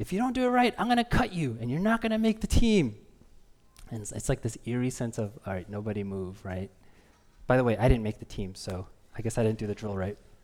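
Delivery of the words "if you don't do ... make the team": high, yelled, threatening coach voice. Retelling a team tryout, quote the man yelling at the kids: retelling a man's yelled threat. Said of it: "He's like".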